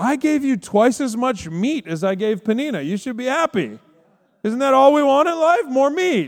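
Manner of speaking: high, truly baffled, puzzled voice. Retelling the Bible story, acting out the husband's words: imitating Elkanah. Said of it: "this is Elkanah".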